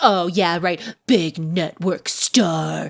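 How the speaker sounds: slow, exaggerated, over-the-top caricatured line reading. Retelling a character's line from the show: imitating an over-the-top caricatured delivery. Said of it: "big network star is so caricature, so over the top".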